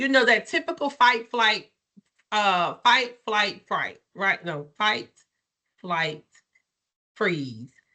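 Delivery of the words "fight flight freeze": low, slow, careful, measured delivery. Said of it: "When I say it too fast, I don't know what I'm saying".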